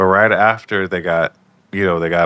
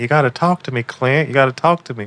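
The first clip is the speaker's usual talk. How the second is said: put-on coaxing voice, pitched higher; 7 semitones higher than usual. Retelling how Clint's mom tries to pull it out of him, imitating Clint's mom coaxing. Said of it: "trying to pull it out of him".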